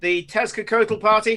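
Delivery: high-pitched, loud, proclaiming call. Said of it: "wizards comes forward and says".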